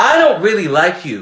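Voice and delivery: steady high-to-low pitch fall from I to you. Showing what the voice does in a sentence, pitch falling from I down to you. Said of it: "it's going from top to bottom".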